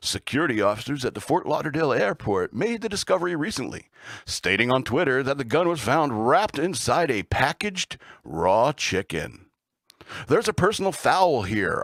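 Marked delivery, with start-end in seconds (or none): 0.0-9.5 put-on radio news announcer delivery. Reading a news item aloud: put-on radio announcer voice. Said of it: "I'll use my radio voice".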